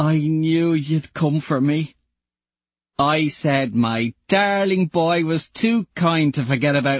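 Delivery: put-on sniffly. Mickey speaks to the one who came for him, sniffling. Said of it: "He sniffles".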